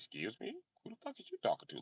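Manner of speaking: indignant, offended pit bull voice, breathy whisper. Acting out a pit bull told to get off the bed: offended pit bull voice. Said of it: "Pit bull ears go back like".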